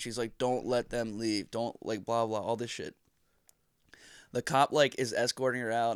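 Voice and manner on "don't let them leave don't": mock freaking-out, panicked pleading voice. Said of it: "freaking out about it".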